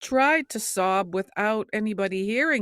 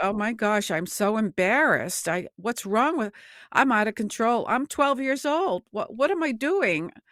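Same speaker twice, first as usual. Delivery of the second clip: acted, tearful, panicked crying voice. Recalling weeping in the communion line at twelve, retelling weeping panic. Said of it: "and I start weeping".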